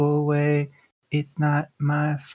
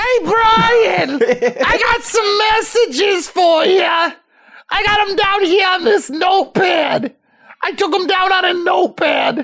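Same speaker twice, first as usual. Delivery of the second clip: put-on high-pitched, scraggly voice with Boston accent; 6 dB louder than usual. In a podcast bit, playing the speaker's mother calling to brian: high-pitched, scraggly boston mom voice. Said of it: "gave my mother a high-pitched, scraggly voice and a sort of Boston accent".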